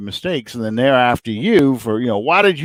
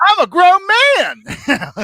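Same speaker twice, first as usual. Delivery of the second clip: very high, slow, stretched rant cracking high; 4 dB louder than usual. Retelling a football coach's rant at reporters: imitating Mike Gundy's voice cracking. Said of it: "His voice cracks".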